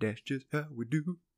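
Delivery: put-on soft voice in a Louisiana accent. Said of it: "and he goes".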